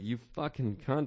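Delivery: put-on temper finally giving way, furious. Recounting a woman who kept yelling boo, the speaker retells losing it. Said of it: "I just lost my mind".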